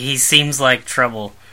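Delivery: ordinary delivery, nothing marked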